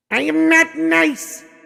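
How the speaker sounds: very high, rough, evil villain voice. Given the prompt 'Skeletor voice', the speaker answers in Skeletor voice. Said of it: "actually a really good Skeletor right there".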